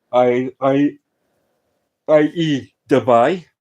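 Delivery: speaking through a yawn. Someone talking through football transfer rumours, yawning while talking. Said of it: "Sorry, I'm yawning".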